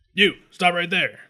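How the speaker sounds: high, mechanical security-robot voice. Voicing a robotic officer who orders a fleeing character to stop: robotic officer voice. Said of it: "A robotic Absalom Sec officer looks down and says".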